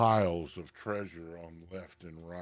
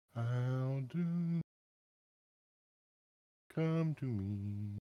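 hypnotic, mournful, entrancing calling voice, much higher; 6 semitones higher, 4 dB quieter than usual. A game master voices a mysterious voice calling a character by name, hypnotic and mournful. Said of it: "The voice almost hypnotic".

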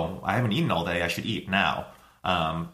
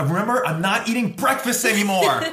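mock shout, much higher and louder; 12 semitones higher, 5 dB louder than usual. Retelling being woken at 5:30 in the morning: imitating Lauren shouting. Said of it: "essentially just shouts at me like".

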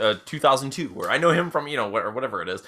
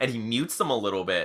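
ordinary delivery

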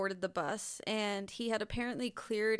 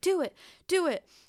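mock yell, higher and louder; 9 semitones higher, 9 dB louder than usual. Retelling an armed man's demands to a bus driver, imitating someone yelling. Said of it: "he's just, like, yelling".

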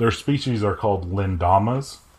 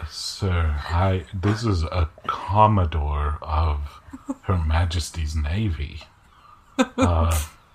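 put-on whispering voice, much lower; 4 semitones lower than usual. Rickolas answers a player who urges him to go flirt: Rickolas's whisper. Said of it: "and he joins you back on your shoulder, / He's always in a whisper. / He's always in a whisper".

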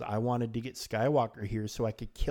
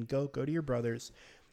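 calm voice, raised pitch; 3 semitones higher than usual. Recapping a show scene, quoting Maul's line, imitating Maul's calm delivery. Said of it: "Maul is really calm".

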